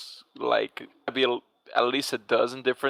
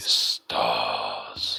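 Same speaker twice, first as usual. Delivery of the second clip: very low, rough voice with British accent. Saying a word in the Aladdin voice another speaker asked for. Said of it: "say stars in that voice for me".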